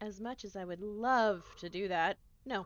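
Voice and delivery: loud, mockingly sarcastic, dismissive delivery. Told the only other option is going back into the forest: sarcastic refusal. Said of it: "Can the sarcasm".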